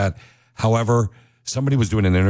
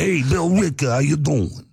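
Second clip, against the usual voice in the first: New Jersey accent, pitched up; 8 semitones higher than usual. Practicing the town name billerica, greeting it in a jersey accent. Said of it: "That's more Jersey".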